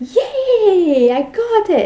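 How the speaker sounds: put-on gleeful yay, loud, stretched long, swooping. Retelling a little kid's reaction right after the shot: imitating a happy child.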